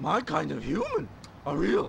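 very quiet, hushed cartoon dog voice. A corgi character speaks, in a Scooby-Doo voice. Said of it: "Was that a corgi with Scooby-Doo's voice?".

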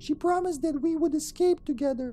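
put-on high little girl voice. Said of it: "I gotta whip out my girl voice".

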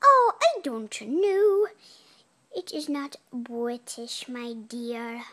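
slow, drawn-out put-on British accent. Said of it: "How come you have a British accent?".

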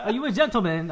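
loud, awful, over-the-top put-on English accent. Joking about the british, asking about being a gentleman: worst english accent. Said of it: "I'm doing the worst English accent".

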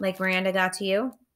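plain

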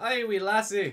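put-on Scottish accent. Answering a challenge that their own accent is worse: put-on Scottish accent. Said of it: "Better than yours".

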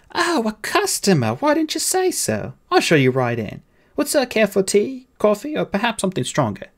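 very high-pitched voice, full of charm. Narrating a story, a nurse now greets a young customer: all charm. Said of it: "the nurse was all charm".

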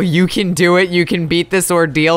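ordinary delivery

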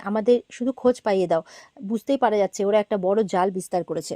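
ordinary delivery

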